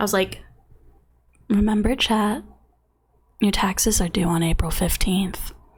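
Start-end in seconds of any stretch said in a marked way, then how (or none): 1.5-5.5 deep, low voice right on the mic. Reminding chat that taxes are due, low voice close to mic. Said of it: "the low voice ... I got really close to the mic".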